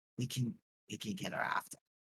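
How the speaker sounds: soft, leaning-in, in-character whisper. Leaning over to another character in a game scene: whispering in character. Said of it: "lean over and, and whisper".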